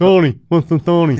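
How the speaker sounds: north side Dublin accent, deaf-sounding speech. Showing how to do a proper north side dublin accent: north dublin accent, sounding deaf. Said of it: "just sound deaf".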